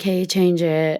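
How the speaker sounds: mild, understated, low-key, gentle delivery. Speaker recalling the quiet voice that spoke before the loud one, quietly. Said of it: "kind of quietly like".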